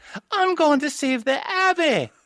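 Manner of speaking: put-on very high-pitched anime-boy style voice. Complaining about a bad voice cast, quoting Matthias: high anime-boy Matthias voice. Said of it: "like almost anime boy voice".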